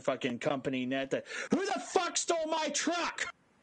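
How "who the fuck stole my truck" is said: put-on very high-pitched, shrill yell. Retell the day he yelled over the company net, imitating Cap yelling. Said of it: "You sound exactly like Cap".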